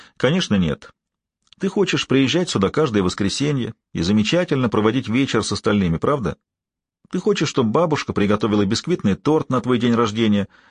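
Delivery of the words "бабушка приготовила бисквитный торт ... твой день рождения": ordinary delivery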